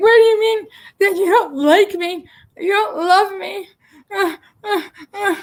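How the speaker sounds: very high, tearful, sobbing crying voice. Retelling a phone call in which she was flipping out: imitating someone crying. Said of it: "she's flipping out and she's crying".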